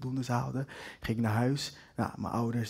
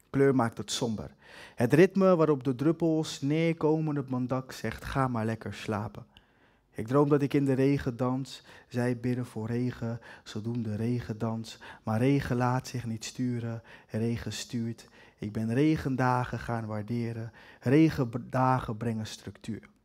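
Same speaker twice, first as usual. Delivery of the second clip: recited like a poem. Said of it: "mijn eerste gedicht heet Regendagen en gaat als volgt".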